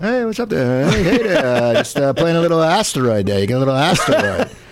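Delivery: swooping, animated character voice. Retelling how they found him at a turnpike rest stop, doing an impression of him. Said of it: "That's a very good impression".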